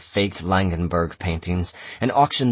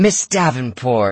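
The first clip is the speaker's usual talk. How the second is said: high, projected voice carrying across a room; 5 semitones higher, 4 dB louder than usual. Philippa grabs the auctioneer by the arm and addresses her: carrying voice. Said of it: "she said in a carrying voice".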